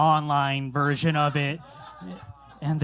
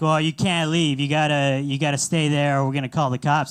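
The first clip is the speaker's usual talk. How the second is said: put-on Boston accent; 3 dB louder than usual. Retelling a phone call with a parking company: imitating a boston accent. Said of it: "The guy answers with a Boston accent".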